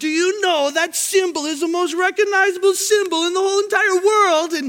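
put-on high amateur Irish accent. Quoting a kid from ireland who came up to the car, in an attempted irish accent. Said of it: "I can't do an Ireland accent, but Irish accent. But I'm going to try".

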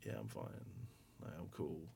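choked near-sob, forcing the tears down. Retelling answering the yoga teacher after a back injury: imitating holding back sobs. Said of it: "trying not to, like, sob".

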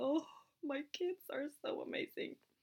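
slow, breathy, whispered, moved-to-tears murmur. Parent retells crying in the car on the way to kindergarten: retelling crying a little. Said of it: "står jeg og griner litt i bilen".

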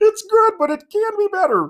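very high, loud, put-on Indian accent. Mimicking the other speaker's line back at them as an Indian Kermit impression. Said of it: "You sound like Indian Kermit".

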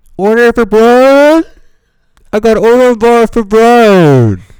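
very high, very loud, booming loudspeaker announcer yell. Explaining why he talks loudly, he acts out paging at work: retelling a yell over the overhead. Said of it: "Yelling across the building when you're doing that on the overhead".

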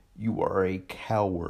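very slow, low, drawn out, each word weighed. Addressing Don directly, saying it very slowly, very deliberately. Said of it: "I want to say this very slowly, very deliberately".

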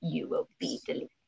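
hushed, whispered muttering under the breath. A teacher shows what they mutter when students annoy them, muttered under breath. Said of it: "I mutter that under my breath".

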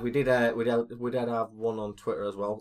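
slurred, mushy words running together. Mentioning one more question from twitter, slurring words. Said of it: "I'm slurring my words now".

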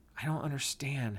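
said softly, soft and hushed. Josie replies to the narrator's whispered news, softly. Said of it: "she said softly back".

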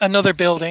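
normal talking voice

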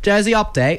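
high put-on British accent. Introducing a segment called jersey update in a put-on british accent. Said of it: "I'm going to still do the British".

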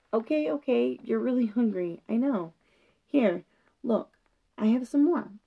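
plain

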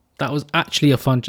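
comes out sounding sarcastic. Thanking a guest at the end of a chat, sounding sarcastic. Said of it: "that sounded really sarcastic".

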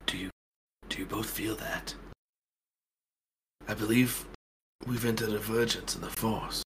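very quiet half-whisper. Voicing a character who senses a vergence in the force: half-whispering in character. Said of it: "Charles, he whispers".

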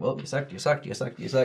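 usual speaking voice

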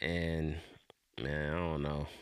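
thoroughly let-down, disappointed tone. Talking about the BET cyphers all using the same beat, disappointed. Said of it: "You sound super disappointed".

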